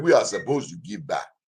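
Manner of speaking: imitated West African accent. A host repeats a woman's answer, in a West African accent. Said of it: "That's my West African accent".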